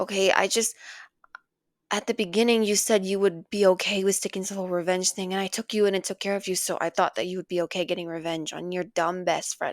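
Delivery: booming, very loud villain voice. Playing the villain in a storytelling audio, speaking to the listener. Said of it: "Storytelling with your Villain Audio".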